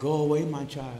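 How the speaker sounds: meek, timid, very quiet, barely audible. Mocking the Hollywood version of Jesus, imitating timid Hollywood Jesus. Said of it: "He's always timid".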